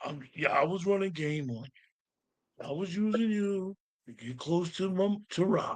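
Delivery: slow, drawn-out cartoon dog voice. Quoting a character's line from the episode, imitating an actor sounding like Scooby-Doo. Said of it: "Sitting there sounding like Scooby-Doo".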